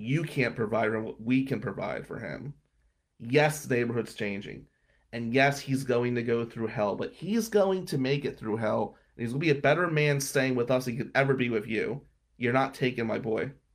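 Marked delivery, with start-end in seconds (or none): none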